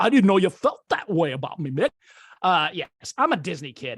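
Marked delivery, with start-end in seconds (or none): 0.0-1.9 cartoonish voice, rattled off. A self-described Disney kid does his best impression, Disney cartoon impression. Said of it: "give you my best uh".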